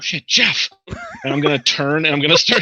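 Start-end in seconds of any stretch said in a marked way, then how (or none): 0.0-0.7 muttered to oneself, hushed, barely voiced. Reacting in character to a giant explosion: muttered under breath. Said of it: "under my breath".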